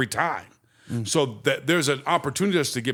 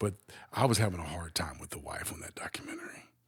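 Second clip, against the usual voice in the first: whispered, barely audible, very quiet; 8 semitones lower, 11 dB quieter than usual. Talking about a documentary, the speaker whispers an aside. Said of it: "I'll whisper this".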